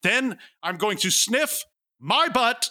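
put-on high, full-throated, top-of-the-lungs yell. Retelling what they shouted standing up from the couch, retelling a shout. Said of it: "I say at the top of my lungs".

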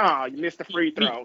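complaining, griping, grumbling tone. Imitating a passive fan complaining at a basketball game: imitating a complaining fan. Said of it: "I love that voice".

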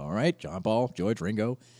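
usual speaking voice

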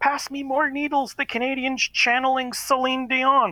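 very high, full-throated, top-of-lungs screaming. Retelling a friend yelling during needle play: imitating Matt screaming at top of lungs. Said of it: "scream at the top of his lungs".

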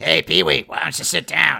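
high, rough character voice. Guessing how the Pee-wee's Playhouse chair Cherry sounded: voice like Marge Simpson. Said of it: "She sounds like Marge".

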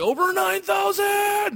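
high, slow, drawn-out screaming yell.

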